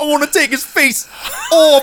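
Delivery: very high-pitched, slow, drawn-out movie-actor voice. Joking about how an actor sounds in every movie: John Travolta impression. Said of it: "that's what he sounds like".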